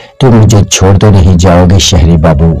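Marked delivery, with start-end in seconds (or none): none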